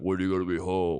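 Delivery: rough, gruff, big cartoon ogre voice. Joking about how people hear texts, reading the boss's text in a Shrek voice. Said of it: "your boss is from Shrek?".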